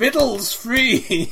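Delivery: high, loud, slow bellow.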